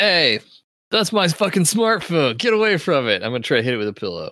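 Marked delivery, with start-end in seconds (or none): 0.0-3.2 full-throated, raised, high-pitched yell. A player's character shouts at a creature grabbing their smartphone, yelling. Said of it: "I'm yelling".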